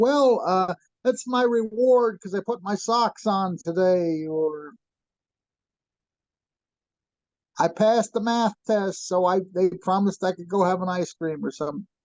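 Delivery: high, heavily sarcastic put-on voice. Retelling how they answer people's remarks at night, retelling own sarcastic reply. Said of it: "I'll be very sarcastic".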